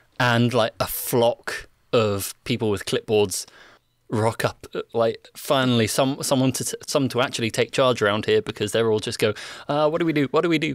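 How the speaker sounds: normal talking voice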